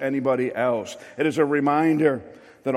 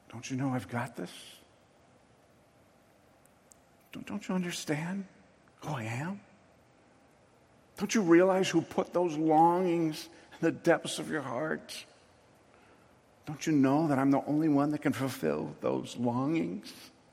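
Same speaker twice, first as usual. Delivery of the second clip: put-on whispering voice, quieter; 8 dB quieter than usual. Voicing God's gentle reassurance to the congregation: acting out a whisper. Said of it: "He whispers".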